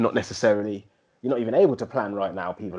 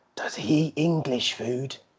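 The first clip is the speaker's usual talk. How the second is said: put-on hushed, high, slow, drawn-out old woman whisper; 5 semitones higher, 3 dB quieter than usual. Retelling how a nan asked in the kitchen: imitating a whispering nan. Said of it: "nan was trying to whisper".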